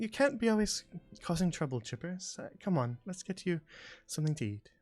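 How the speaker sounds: mumbling half under breath. Narrating a woman speaking to a little flying squirrel, muttering under her breath. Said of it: "muttering, kind of under her breath".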